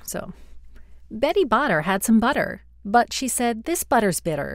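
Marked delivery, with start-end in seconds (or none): 1.1-4.6 bright, smiley, cheerful commercial delivery. Reading a tongue twister aloud, in a smiley grocery-commercial tone. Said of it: "I'm gonna do this as like a really smiley kind of like, I don't know, like grocery commercial".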